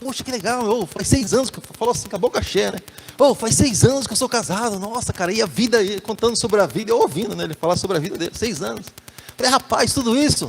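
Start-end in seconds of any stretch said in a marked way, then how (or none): 3.2-5.3 put-on very excited talk. Retelling what a young guy said in a conversation, imitating someone very excited. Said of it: "falando assim, todo empolgado".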